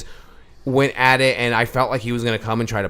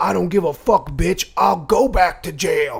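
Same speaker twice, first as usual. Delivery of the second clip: mock super loud, high, drawn-out yell, word by word; 7 semitones higher, 3 dB louder than usual. Telling a story about neighbors fighting, quoting a man, retelling a man yelling. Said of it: "this dude is yelling super loud".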